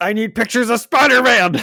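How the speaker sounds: loud, very high voice. Describing a figure holding a newspaper: J. Jonah Jameson voice. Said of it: "before I do my J. Jonah Jameson voice".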